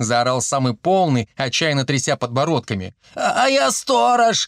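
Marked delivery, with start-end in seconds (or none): 3.1-4.5 pitiful, plaintive, little high squeak. The skinny one of a group of men speaks up after the fat one, squeaking plaintively. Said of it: "жалобно пискнул костлявый".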